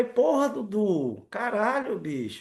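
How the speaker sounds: upset cursing, high, drawn-out angry outburst. Speaker retells what they said back to Dudu, who was teasing them, retelling own angry outburst. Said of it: "Eu falei".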